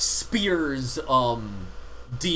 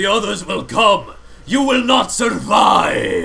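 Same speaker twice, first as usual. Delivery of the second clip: very loud, booming, rough, rasping demonic voice; 7 semitones higher, 9 dB louder than usual. Game narrator voices a retreating pit fiend addressing the players: booming voice. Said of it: "you hear his booming voice".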